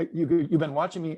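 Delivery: mock accusatory tone. Retelling his reply to a man who said he'd been watching, retelling an accusatory reply. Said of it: "sort of accusatorily".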